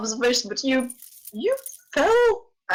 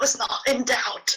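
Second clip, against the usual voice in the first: soft, hushed whispered words. A character whispers a reply back to Aaron, whispering. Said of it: "he whispers back".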